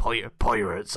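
put-on West Country English accent coming through. Talking about space pirates, unable to stop a West Country accent coming through. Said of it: "I can't stop the West Country accent coming through".

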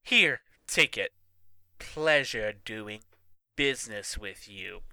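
smooth, purring, cat-like delivery. Reading a story aloud, the narrator voices a character handing over homework, purring. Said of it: "Haley purred".

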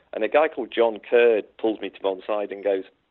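ordinary delivery

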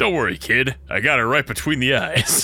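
put-on sleazy comedian voice. Telling another speaker how he would sound, in a Rodney Dangerfield sleazeball voice. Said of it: "every sleazeball voice from now on is Rodney Dangerfield".

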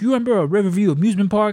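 put-on lifelong Chicago old-timer voice. Retelling what a sixty-nine-year-old lifelong Chicagoan asked: imitating his voice. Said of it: "that's what he sounds like".

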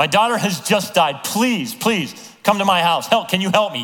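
put-on begging tone. Retelling a father asking Jesus for help: imitating someone begging. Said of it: "He's begging".

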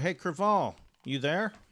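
calling out loudly. Calling out for a companion who vanished from his seat, shouting. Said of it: "I'm going to shout".

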